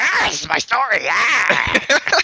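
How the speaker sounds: very slow, greedy, grasping creature voice. Teasing that Andy grabbed onto this story, speaker imitates Andy grabbing a story. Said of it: "I like your impression of Andy when he's grabbing onto a story".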